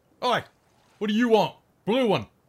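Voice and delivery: loud, high-pitched shouting. Voicing a guard at the town gates: guard shouting down. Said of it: "one of the guards will shout down".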